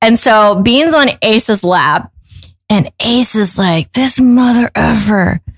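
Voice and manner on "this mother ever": put-on mutter, under the breath but loud enough to hear. In a courtroom hallway, Ace mutters so the man will hear, retelling an under-breath remark. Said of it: "Like under his breath".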